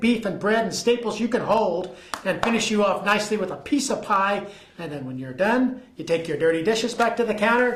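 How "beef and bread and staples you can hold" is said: usual speaking voice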